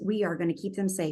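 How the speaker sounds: normal talking voice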